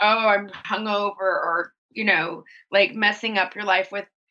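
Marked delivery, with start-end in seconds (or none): none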